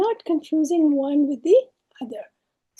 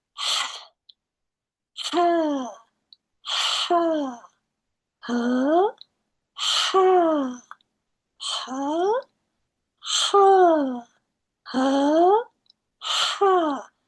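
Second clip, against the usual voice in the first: breathy throat H, much slower. Teaching letter sounds, demonstrating a breathy h from the middle of the throat. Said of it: "a lot of air from the middle of the throat".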